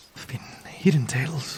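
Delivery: hushed voice. Voicing a character sharing rumors with another traveler: whisper. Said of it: "his voice hushes down to a whisper".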